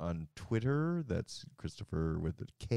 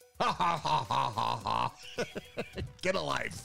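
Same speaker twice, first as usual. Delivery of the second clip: put-on old-man cackle, higher pitch; 6 semitones higher than usual. Asked for a rendition at the end of a stream, cackling like the Muppets old men. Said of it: "give me a rendition of you cackling like the Muppets".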